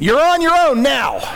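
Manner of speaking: mock loud shout. Retelling how a woman reacted to a third sneeze, retelling a shout. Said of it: "she shouted".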